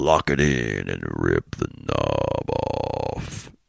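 very low, very slow put-on radio DJ rumble. Recalling writing jokes for a KLOS FM radio personality, in radio announcer voice. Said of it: "I love doing that radio voice. Here we go".

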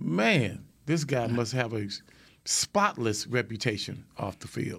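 mock, plainly sarcastic aside. Retelling own reaction to a quarterback's farewell: retelling own sarcastic remark. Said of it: "just in case that anybody missed your sarcasm".

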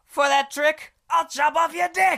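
exaggerated put-on character voice, very high, shrill, loud. Performing a suggested line, in an exaggerated put-on character voice. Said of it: "You do his voice".

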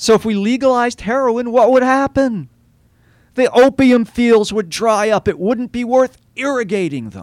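impassioned, high, heated yell. Arguing his point on his soapbox, yelling. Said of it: "I'm yelling and I apologize".

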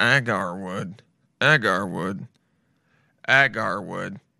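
very low, machine-like robotic voice. Copying a pronunciation recording word for word: imitating a robotic pronunciation voice. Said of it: "I can't do it 'cause I'm not a robot".

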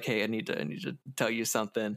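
put-on nervous voice. Speaker pitching a scene where a man approaches a woman before work, acting out nervousness. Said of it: "He's like real nervous approaching her".

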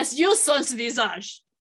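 put-on mangled, clumsy French accent. Trying out a practiced french phrase on the other speaker, in a bad french accent. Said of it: "How did you make that sound more German?".

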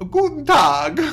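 loud, high, belted-out put-on German accent. Retelling how their father could do any accent, doing his german accent. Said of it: "he'd do this accent where he'd be like".

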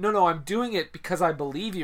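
normal talking voice

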